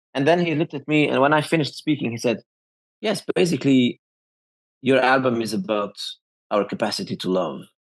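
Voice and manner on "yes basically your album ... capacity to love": voice dropped to deep, low man's voice. Retelling what a man said after the speaker finished, imitating his deep voice. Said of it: "with his deep voice like this".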